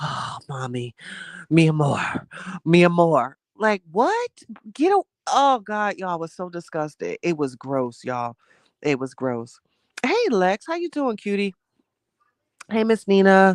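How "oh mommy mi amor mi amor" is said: mock heavy, breathy, sexy, seductive breathing voice. Retelling what a partner whispered in her ear: imitating heavy sexy breathing. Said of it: "he was doing the heavy breathing because he thought that that was sexy".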